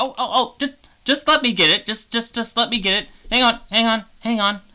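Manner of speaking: shrill little squeak, very high-pitched and very loud. Telling a story, the speaker voices something large at the door: squeaky voice. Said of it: "you hear like a kind of squeaky voice".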